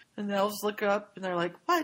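normal talking voice

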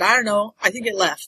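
normal talking voice

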